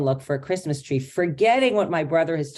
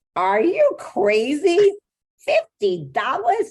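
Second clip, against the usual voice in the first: put-on very high, swooping, drawn-out, crazy New York accent; 11 semitones higher, 3 dB louder than usual. Retelling what she will say out loud to people about the tree, New York accent. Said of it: "in a New York accent".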